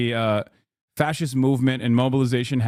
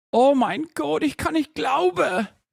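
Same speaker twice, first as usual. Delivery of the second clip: very high, exaggerated, put-on German accent. Asking the other speaker if he's heard it, showing off his german accent. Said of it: "my German accent".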